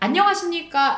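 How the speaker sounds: loud, high, overbearing shout. Advice for passing, example of a greeting to avoid: shouting, uncomfortable voice. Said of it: "뭔가 소리를 지르는 이런 불편하고 부담스러운 목소리".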